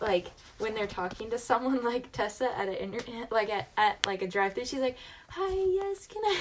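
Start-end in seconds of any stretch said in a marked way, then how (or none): 5.3-6.4 put-on girl's voice, much higher and quieter. Describing how Tessa talks at a drive-thru, imitating Tessa's high-pitched voice. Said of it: "they're pitched".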